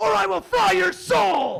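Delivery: very loud, high, rough, demonic roar. Answering an order-taker while ordering food, Satan voice. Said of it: "This is Satan".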